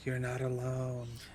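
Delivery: whispering in a character voice. Repeating a character's line after being cut out: whispering in character. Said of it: "She'll whisper".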